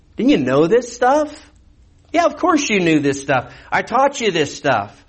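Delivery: sarcastic tone. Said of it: "This, this is all sarcastic".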